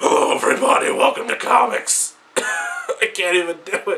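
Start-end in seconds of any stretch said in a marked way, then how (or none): 0.0-2.2 bad put-on hero voice, half whispered then high.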